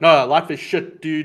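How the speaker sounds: mock angry complaining. Retelling the reply of a man angry with the world, imitating angry complaining. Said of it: "He's so angry with the world".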